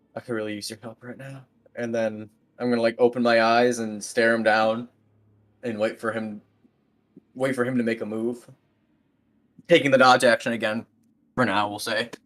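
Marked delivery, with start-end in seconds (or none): 0.2-1.5 muttered quietly under the breath, lower and quieter. Saying a quick prayer in character before a tense standoff: said under the breath. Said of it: "under my breath".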